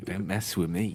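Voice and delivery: mock muttering under breath. Acting out someone walking down the street: imitating someone muttering under breath. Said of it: "Just muttering under your breath".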